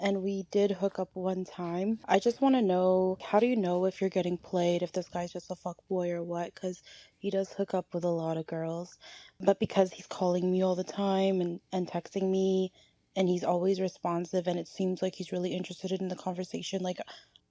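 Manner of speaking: normal talking voice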